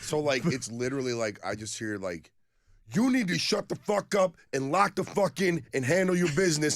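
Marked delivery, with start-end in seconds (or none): 2.9-6.8 heated, loud, very high-pitched, furious angry yelling. Retelling a stranger heard from a restroom, imitating angry phone yelling. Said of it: "sounds like there's two dudes fighting".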